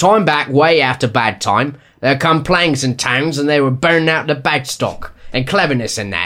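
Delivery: put-on London Cockney accent, reading-style delivery. Told the first reading was too formal, the speaker redoes the passage in a cockney accent. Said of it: "So you want Cockney?".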